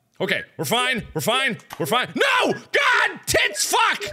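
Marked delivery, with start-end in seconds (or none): 2.1-4.1 long, shrill, very high, drawn-out screams. A player reacting to something in the game, screaming loudly. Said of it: "[Screamed loudly]".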